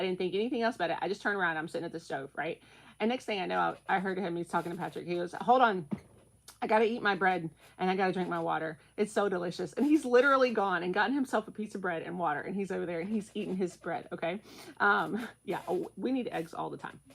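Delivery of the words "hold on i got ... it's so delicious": ordinary talk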